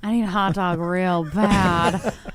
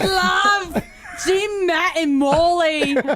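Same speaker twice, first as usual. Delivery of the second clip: put-on pitched-up Australian accent, "love" drawn out; 8 semitones higher than usual. Saying the show's tagline on air, in a put-on Australian accent. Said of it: "I went Australian".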